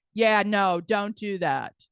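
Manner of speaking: deep, low, slow, deliberate manly rumble. Imitating the man who sits there and everybody listens, deep man's voice. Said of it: "the man who has the deep voice, who sits there and goes".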